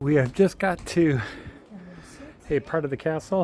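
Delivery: breathless and winded. Speaker just after a long uphill walk to a castle, out of breath. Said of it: "If I sound out of breath".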